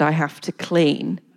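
put-on sad, dejected voice. Retelling the cleaner walking in, the speaker quotes her in a mock-sad, dejected way. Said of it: "in a very sort of sad, dejected way".

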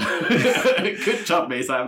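big, high, laughing cheer. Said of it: "but good job".

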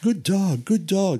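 cheery, upbeat, high, drawn-out voice. Explaining how to use your voice with a dog, demonstrating upbeat praise. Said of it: "So always be upbeat".

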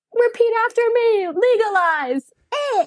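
very high, wonky, drawn-out musician-style calling out. Retelling a crowd scene, imitating a wonky stage musician. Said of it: "some wonky musician on stage being like".

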